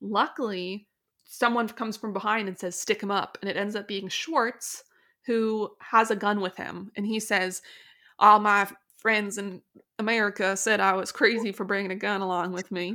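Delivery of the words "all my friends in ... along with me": loud, amateur, put-on Southern American accent. Voicing a man in a story who brought a gun, put-on Southern American accent. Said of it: "First time doing a Southern accent on here".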